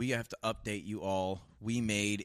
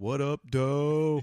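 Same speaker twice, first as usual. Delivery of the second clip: very loud delivery with "doe" drawn out; 6 semitones higher, 8 dB louder than usual. Adding another signature intro of the absent co-host: Chris Leppert impression.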